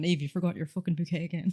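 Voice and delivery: put-on mock-exasperated scolding tone. Recalling her wedding, the speaker imitates a guest chasing her all day: mock-exasperated scolding. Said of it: "she was running around after me all day going".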